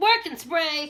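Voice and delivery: loud, proudly shown-off Maryland accent. Saying a product name to show off own accent: Maryland accent. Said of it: "I'm gonna show my Maryland accent".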